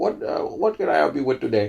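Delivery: put-on Indian accent.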